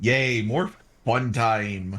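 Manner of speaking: mock enthusiasm, very slow and drawn-out, sarcastic. Saying aloud in character for Crom to hear: sarcastic cheer. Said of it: "You can hear the sarcasm".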